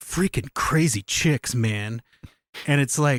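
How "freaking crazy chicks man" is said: mock muttering under the breath, lower. Retelling a character's angry line from a deleted scene: imitating muttering under breath. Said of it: "he says under his breath".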